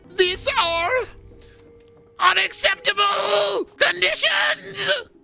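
very high, shrill, raw cartoon scream. Speaker explains an impression he no longer does, then does it; Lemongrab impression. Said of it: "used to be Lemon Grab from Adventure Time".

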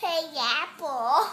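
loud, babyish put-on baby talk voice. Voicing what the baby might be saying: imitating baby talk. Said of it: "in baby talk".

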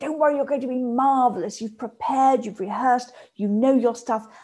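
upbeat, rah-rah cheerleader-style encouraging voice. Acting out an encouraging inner voice before speaking: cheerleader voice. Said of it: "it's a real cheerleader".

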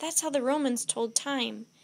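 plain reading voice

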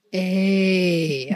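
put-on big booming voice. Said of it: "a big booming voice".

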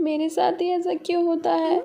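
weeping while speaking. [name], upset that she no longer wants her new bag, complains while crying. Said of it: "रिया क्यों रो रही है".

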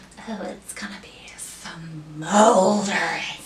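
low, slow teasing whisper.

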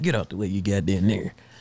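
mock muttering under the breath. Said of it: "And he was under his breath".

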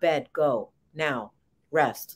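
very low, slow, deliberate, curt one-word delivery. Imitating a leathery-skinned monosyllabic figure who orders rest: imitating curt one-word commands. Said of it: "monosyllabic character that would tell you".

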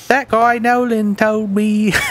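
attempted British accent. Voicing a character for the group, attempting a British accent. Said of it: "I'll try my best at a British accent".

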